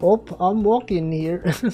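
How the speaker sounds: put-on Minnesota accent. Streamer trying one line in different accents, now a minnesota accent. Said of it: "What if it was like a Minnesota accent?".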